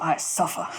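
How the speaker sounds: odd, weird, breathy put-on whisper. Voicing a character who wakes up as the hug breaks: weird voice. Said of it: "in this weird voice".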